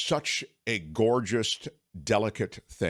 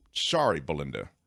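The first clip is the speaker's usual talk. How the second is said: normal talking voice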